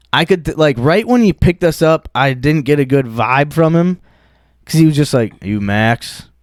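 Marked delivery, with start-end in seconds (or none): 5.4-6.2 put-on icy cold delivery, no warmth. Retelling how the Uber driver asked a name on pickup: imitating a cold tone. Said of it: "And he said it, like, cold".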